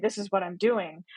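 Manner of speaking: ordinary talk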